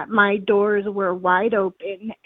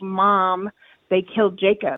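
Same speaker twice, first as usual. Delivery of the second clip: ordinary delivery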